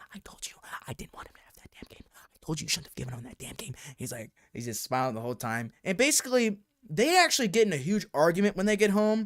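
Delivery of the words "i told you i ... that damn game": seething, angry, very hushed whisper. Retelling how the mom whispered at her boyfriend in the car: imitating mom whispering angrily. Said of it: "but she whispered".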